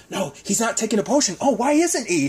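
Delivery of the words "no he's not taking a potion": hushed whisper. Retelling a scene where characters argue over a potion, whispering. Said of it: "and they're whispering".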